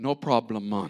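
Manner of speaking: easy, relaxed put-on Jamaican accent. Joking that god is jamaican, saying the line in a jamaican accent. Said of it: "since God's Jamaican".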